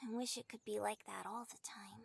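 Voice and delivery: somber, soft, low, tender whisper.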